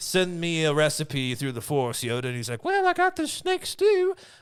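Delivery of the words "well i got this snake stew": high, raised, loud, squeaky cartoon creep voice. Acting out Yoda's reply in a story, accidentally sounding like Herb. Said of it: "I don't know why he sounded like Herb from, Family Guy".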